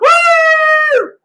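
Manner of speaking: loud, very high, put-on whoop let fly.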